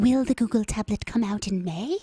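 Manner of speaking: put-on little old lady English voice. Asking the other speaker a question: little old lady english voice. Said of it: "my little old lady English voice".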